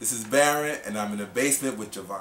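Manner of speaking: happy, pleased tone.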